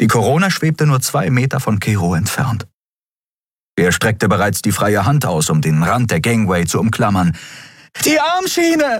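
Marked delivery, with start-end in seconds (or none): 8.1-9.0 strained, throat-tearing all-out scream, very high. Over the shriek of ship engines near a gangway, she is screaming. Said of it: "Schrie Endriel".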